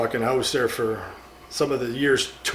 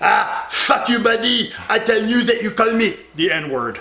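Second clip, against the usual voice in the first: put-on thick French accent, very high pitched; 9 semitones higher than usual. Retelling what a man said back to a guy, imitating News, heavy French accent. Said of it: "Really heavy French accent".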